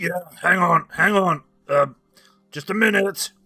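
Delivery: very loud, gruff holler. Narrating a scene, a father behind the door answers a knock in a gruff voice. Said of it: "you hear a gruff voice go".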